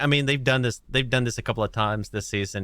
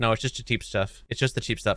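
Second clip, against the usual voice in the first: plain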